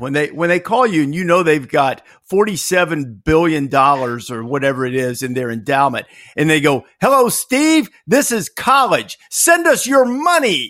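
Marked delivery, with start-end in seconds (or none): 7.0-10.7 very high, comic, comedian-style voice. Asking another speaker how he answers a school's calls: John Mulaney impression. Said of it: "I'm going to channel my inner John Mulaney here".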